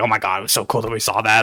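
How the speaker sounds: put-on gushing, quiet and low. Describing overheard people excitedly talking in hushed tones; imitating excited gushing. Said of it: "they're just like gushing over".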